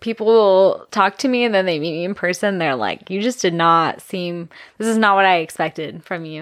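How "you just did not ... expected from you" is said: ordinary talk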